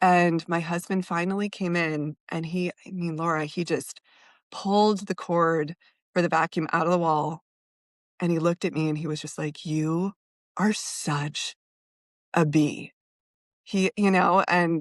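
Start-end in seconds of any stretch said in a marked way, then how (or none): 9.6-12.9 deep, dark, rumbly, very slow, drawn-out delivery. Retelling the husband unplugging the vacuum and turning to the speaker: mimicking a dark, rumbly, low voice. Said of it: "he said it in kind of that dark, rumbly, low voice".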